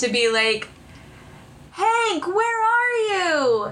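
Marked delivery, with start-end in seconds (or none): 1.7-3.7 very high, muffled, cupped-hand call from far off. Playing a character calling for his friend, making a far-away sound. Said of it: "cody puts his hand around his mouth to try and make like a far away sound".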